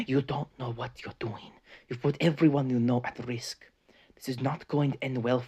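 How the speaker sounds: put-on grave, no-nonsense, serious tone. Retelling a scene where a character turns from nice to warning someone: imitating a serious tone. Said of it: "gets all serious".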